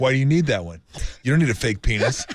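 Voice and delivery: put-on peeved, upset, indignant man getting mad. Asked to voice Tim's reaction, imitating Tim getting upset. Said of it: "He was getting upset".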